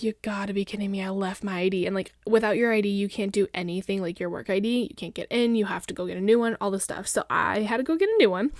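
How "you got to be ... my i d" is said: mock shocked gasp of disbelief. Retelling realizing on the freeway the ID was left home: retelling a shocked gasp. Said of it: "I audibly gasped in the car".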